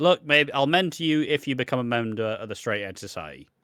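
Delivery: ordinary delivery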